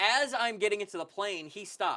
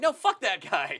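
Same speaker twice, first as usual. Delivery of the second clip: slow, pissed-off, angry dismissive tone; 4 dB louder than usual. Recounting a guy who ignored the people in front, retelling angry words. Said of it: "I was pissed".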